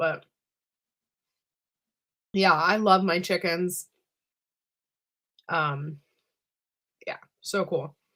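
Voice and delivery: speaking with mouth full. A speaker apologises for eating while talking, talking while chewing. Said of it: "Sorry if I'm chewing too loud".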